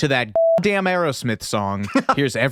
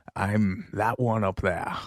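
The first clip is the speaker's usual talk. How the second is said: put-on Scottish accent, lower and quieter; 3 semitones lower, 5 dB quieter than usual. Quoting a second movie line to a friend: Sean Connery as William Forrester. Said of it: "I did the Finding Forrester one".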